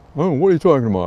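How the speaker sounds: loud, dim, dull-witted Neanderthal caveman inflection. Mimicking the typical man on the street, in a Neanderthalish caricature voice. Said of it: "Sorry to use the Neanderthalish inflection to make the point".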